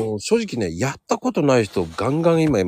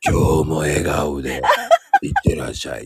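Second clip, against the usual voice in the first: very low, deep, intimidating, menacing voice; 8 semitones lower than usual. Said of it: "出たよそのドスの効いた声".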